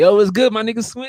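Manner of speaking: play-acted, very high, hyped-up excited shout. Showing how they greet a close friend versus others, with an excited greeting. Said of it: "I got that excitement in my fucking voice".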